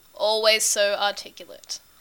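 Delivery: ordinary delivery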